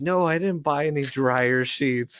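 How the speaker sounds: very loud, high, full-lunged screaming. Retelling how a guy in an online class screamed at his mom: retelling a scream. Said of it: "like screaming off the".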